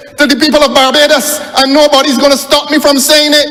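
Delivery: shouting. Addressing the honourable members with the microphone on: shouting. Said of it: "there is no need to shout in the microphone".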